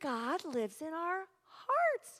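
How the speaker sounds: put-on slow, small three-year-old toddler voice. Retelling what three-year-old Cindy said, imitating Cindy's toddler voice. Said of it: "In her little 3-year-old voice".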